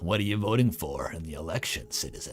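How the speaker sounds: rough, gritty, rough-edged voice. Voicing a character in a game, as asked to say it in a rough voice. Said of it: "Say it with a rough voice".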